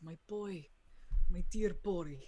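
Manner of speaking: sorrowful. Voicing a grieving father pleading with the player characters: forlorn. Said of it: "the most forlorn look".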